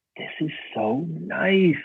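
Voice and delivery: high-pitched, slow, delighted gushing.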